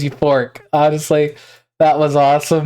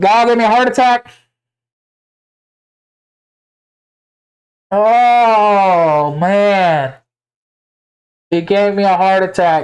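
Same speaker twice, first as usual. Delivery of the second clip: startled, frightened screaming at a higher pitch; 4 semitones higher than usual. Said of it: "I'm sorry for screaming".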